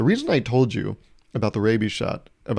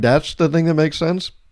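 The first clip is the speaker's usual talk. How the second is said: higher, louder incredulous tone. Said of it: "I'm like".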